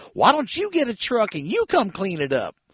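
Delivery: snappish, high, swooping snap. Retelling how she answered when you told her to clean the place up, imitating a woman snapping. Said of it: "she snapped at me".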